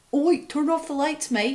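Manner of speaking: put-on Australian accent. In conversation, the speaker switches to a put-on Australian accent. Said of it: "I need to say it in an Australian accent".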